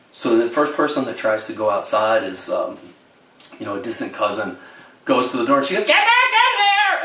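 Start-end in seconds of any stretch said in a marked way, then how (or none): 5.8-7.0 very shrill, loud, stretched-out acted shriek. Retelling how a distant relative stopped a cousin at the door: imitating someone screaming. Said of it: "And, like, screams".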